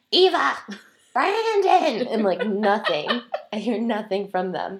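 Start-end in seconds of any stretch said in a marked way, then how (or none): 0.1-2.0 shrill, very high, loud screaming. Lost and searching for a path, recounting screaming for two people: retelling screaming names.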